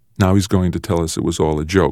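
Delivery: ordinary delivery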